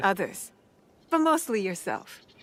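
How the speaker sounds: dry, mocking, sarcastic, swooping sing-song delivery. Answering a character in a game: sarcastic. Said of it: "That was so sarcastic".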